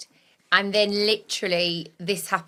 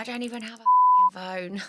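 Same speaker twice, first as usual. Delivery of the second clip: put-on muttering under breath, higher; 4 semitones higher than usual. Retelling how Daisy reacted to the group messages: Daisy muttering under her breath. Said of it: "Daisy muttered under her breath".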